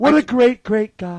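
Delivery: very loud, slow, deliberate, booming rally style delivery. Retelling a speech about Hannibal Lecter: imitating Trump. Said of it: "he's like".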